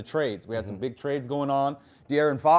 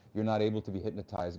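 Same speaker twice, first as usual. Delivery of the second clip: put-on whisper, lower and quieter; 5 semitones lower, 8 dB quieter than usual. Retelling what a hypnotist said to him: imitating a whisper. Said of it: "he whispers to me".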